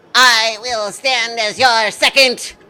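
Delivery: loud, chirpy, vibrating insect-like voice. Voicing a praying mantis person offering to be a second: chirpy, vibrating voice. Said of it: "a chirpy, vibrating, um, voice say".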